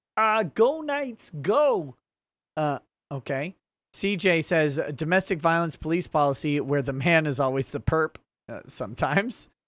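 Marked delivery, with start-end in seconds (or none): 0.4-2.0 high, frog puppet voice. Reading aloud a chat message from Space Force Commander, in Kermit the Frog voice. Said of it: "Space Force Commander says in Kermit voice".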